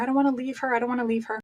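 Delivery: spoken crying, tearful, through tears. Retelling days with a newborn on maternity leave: imitating own past crying. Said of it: "crying almost every day, going".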